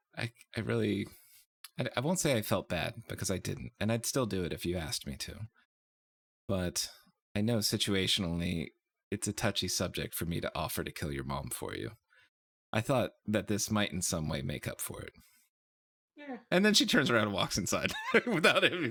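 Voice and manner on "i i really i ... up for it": soft, halting, secretive half-whisper. Game master voices a character half-whispering privately to a player's character. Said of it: "but she whispers to you".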